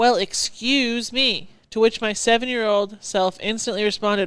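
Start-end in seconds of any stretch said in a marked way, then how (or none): 0.0-1.5 mock biting, accusatory sarcastic tone. Retelling a woman he bumped into in line: mock-sarcastic, accusing. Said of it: "in her most sarcastic and ex- accusing voice".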